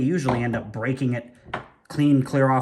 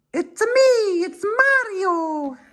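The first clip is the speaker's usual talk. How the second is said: bad put-on voice, very high, squeaky, slow, drawn-out; 4 dB louder than usual. Revealing a part after clearing away the packaging, in a Mario impression. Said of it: "That's my impression of Mario".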